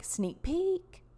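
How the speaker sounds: mock tone, "sneak peek" tossed high and rising. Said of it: "they're like".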